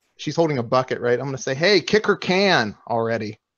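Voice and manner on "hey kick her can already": slow, drawn-out voice projected across a distance. Yelling across the fight at a thug: yelling at the thug. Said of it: "I'm gonna yell over to the thug".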